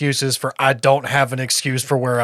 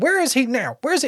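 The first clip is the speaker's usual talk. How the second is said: acted, indignant, angry voice pitched very high; 11 semitones higher than usual. Imagining the wife's reaction to the disappearance: imitating the angry wife. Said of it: "from the wife's perspective".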